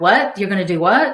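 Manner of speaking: plain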